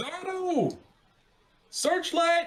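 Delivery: alarmed, very high yell at top of lungs. Playing a character calling out a warning about intruders: yelling at the top of his lungs. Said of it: "yell at the top of his lungs".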